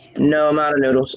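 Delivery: acted, dry, level, flat deadpan monotone. Retelling a son's answer about dinner: imitating a deadpan reply. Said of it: "he said it deadpan, straight face".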